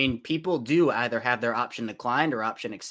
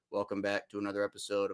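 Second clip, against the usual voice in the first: put-on flat monotone, quieter and lower; 4 semitones lower, 8 dB quieter than usual. Recalling an early episode intro with no setup: imitating own old monotone.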